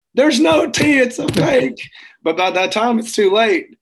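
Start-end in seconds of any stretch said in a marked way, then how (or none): 0.2-1.9 screaming, pitched very high. Retelling how everybody caught on to the fake: imitating everyone screaming. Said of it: "everybody starts screaming it".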